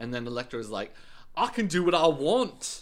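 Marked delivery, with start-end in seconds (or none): 1.4-2.8 very slow, raised, loud put-on cockney, drawn out. Recapping a scene, giving Elektra's reply in a cockney-sounding accent. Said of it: "You sound like a cockney accent".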